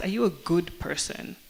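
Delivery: normal talking voice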